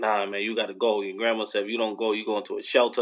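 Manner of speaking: plain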